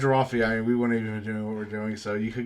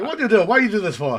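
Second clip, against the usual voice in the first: very high, very loud Italian grandmother voice, yelling; 11 semitones higher, 9 dB louder than usual. In a bit imagining an Italian grandma's eyebrows talking, yelling Italian grandma impression. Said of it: "they would just like be yelling at you like constantly".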